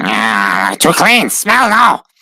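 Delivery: high, sniffing rat-creature voice, drawn-out "ah". Narrating a game, voicing Ratmech sniffing around the party; Ratmech voice. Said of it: "he talks like this".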